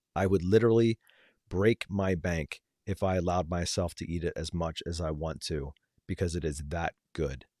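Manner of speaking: ordinary talk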